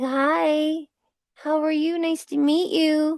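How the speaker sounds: put-on sweet, innocent little baby-bird voice, high and slow. Voicing a young pigeon greeting another bird: voicing a sweet innocent young bird. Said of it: "just all so sweet and innocent".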